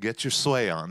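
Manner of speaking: ordinary talk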